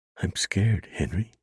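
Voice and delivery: thin, quavering, trembling voice. Narrator reading a frightened woman speaking to a man, thin, quavering voice. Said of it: "she said in a thin, quavering voice".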